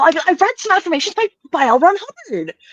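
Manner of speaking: really happy, super enthusiastic, giving it everything. Demonstrating how you'd start off saying a line, really happy and enthusiastic. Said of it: "Really, really happy, giving it all. ... Super, super enthusiastic".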